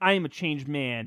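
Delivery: ordinary delivery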